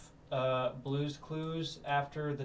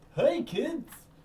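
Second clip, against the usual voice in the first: put-on very high, pitched way up kids' show character voice; 12 semitones higher, 4 dB louder than usual. Recalling watching the Barney movie as a kid: Barney impression. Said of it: "It's Barney".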